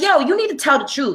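acted, high-pitched, furious angry outburst. Retelling a woman's outburst in court: imitating an angry outburst. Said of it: "she has an outburst in court".

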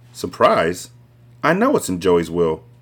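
ordinary delivery, nothing marked

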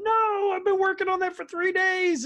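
put-on very high-pitched, shrieking, screaming voice. Retelling a TV scene where a player's game shuts off: retelling a scream. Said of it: "he's screaming".

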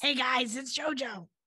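acted raspy smoker's voice. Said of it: "You know how she says that?".

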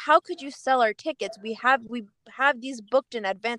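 ordinary delivery

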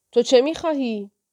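high, shrill, demanding witch yell. Reading a story, a character shouts at the girl who has come to her, shouting. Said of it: "سر واسالیسا فریاد زد".

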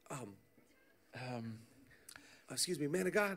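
put-on hesitant stop-start. Retelling how an intern interrupted someone praying, imitating hesitant stop-start speech. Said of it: "You like start and stop three times".

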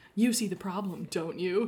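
flirtatious, teasing little tone. Recounting what a woman said about the car, the speaker is retelling a flirty line. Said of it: "she flirtily says".

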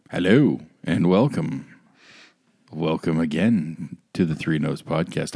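slow, eerie, creeping host voice. Podcast host welcoming listeners to the Three Nose Podcast; creepy tone. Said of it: "I don't know why I'm being creepy about it".

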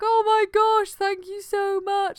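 very high, loud bawling, wailing through tears. Retelling thanking him after coming round, acting out bawling thanks. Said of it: "I was just bawling my eyes out".

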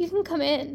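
ordinary delivery

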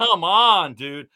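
loud shouting. Recalling a slow pitcher, imitating someone yelling at the TV. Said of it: "would have you yelling at the T V like".

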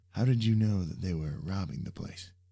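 plain reading voice

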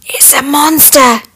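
quiet whispering. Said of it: "whispered one dwarf".

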